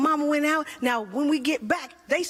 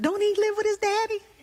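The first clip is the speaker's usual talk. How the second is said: confused, puzzled voice, pitched up; 6 semitones higher than usual. Retelling what people who skip church say: imitating a non-churchgoer. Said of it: "Anybody who don't go be like".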